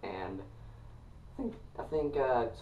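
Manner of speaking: voice breaking and cracking mid-phrase. Talking to viewers about a band, voice cracking mid-sentence. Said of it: "sorry, voice crack".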